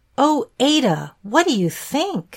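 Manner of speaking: eager, excited, high and swooping. A character who has just approached a friend, ignoring a question: excited. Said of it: "Exclaimed Edith excitedly".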